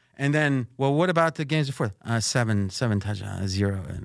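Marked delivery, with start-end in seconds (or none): 2.2-3.9 mock mumble, much lower, slower, less enunciation. Mimicking how he read out the stats, imitating a mumble. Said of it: "saying that with less enunciation".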